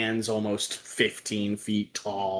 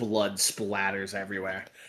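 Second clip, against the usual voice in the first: plain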